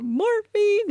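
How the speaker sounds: very high-pitched, tearful voice. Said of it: "I am in tears".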